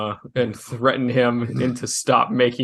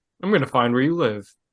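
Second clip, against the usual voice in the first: put-on calm, emotionless, matter-of-fact, no malice. Describing a threat made without malice, the speaker imitates a calm, emotionless threat. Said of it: "Just without any hint of malice".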